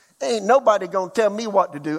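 put-on South Carolina accent. Voicing someone in the store acting like the boss: South Carolina lingo. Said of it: "I'm talking in South Carolina lingo here".

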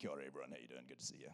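very low, cool, hard tough-guy voice. Greeting everyone at the start, cool tough guy voice. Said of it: "It's my cool, tough guy voice".

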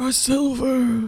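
put-on ghost-like, old-sounding voice. Playing an elder in a scene, speak in a ghostly voice. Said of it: "Why do you sound like a ghost?".

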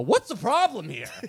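put-on confrontational outburst. Retelling confronting store staff: retelling a loud outburst. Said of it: "I just got really loud and I go".

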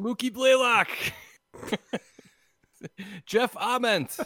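very high, loud, top-of-the-lungs shouting. Describing kids who run around yelling famous people's names: imitating shouting at top of lungs. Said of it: "They're just shouting at the top of their lungs".

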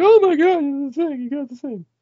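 play-acted very high, weepy, tearful, overjoyed gushing. Acting out how a girlfriend would react to the gift: imitating someone crying. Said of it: "She's gonna cry a lot and be like".

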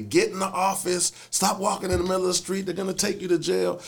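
play-acted shrieking, very high-pitched and upset. Retelling how his upset wife screamed at him on the phone: imitating someone screaming. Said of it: "She was on the phone screaming at me".

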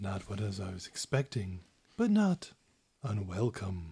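deep, swooping put-on dragon voice. Coming around the corner of the cavern, the party hears a voice, deep booming voice. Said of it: "you just hear the deep booming voice say".

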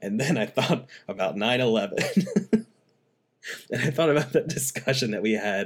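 words broken by bursts of laughter. Telling the listener a past discussion came to mind, laughing while speaking. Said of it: "Why are you laughing?".

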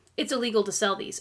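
put-on solemn, no-nonsense, super serious tone. Retelling a friend's warning about selling ammo cans: imitating Tom sounding super serious. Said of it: "he sounds really serious".

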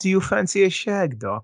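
exaggerated put-on British accent, laid on thick. Retelling what a woman with a British accent said to him, in a British accent. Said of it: "she has to say it in her British accent".

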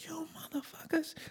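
put-on hushed, furious whispered cursing. Retelling how the kid in the er yelled at them: imitating someone yelling angrily. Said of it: "he's yelling at us. He's mad at us".

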